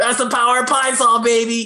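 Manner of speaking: loud, high, full-throated all-out yell. Describing a spirit guardian that holds two bottles of cleaning products: yelling. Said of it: "and she yells".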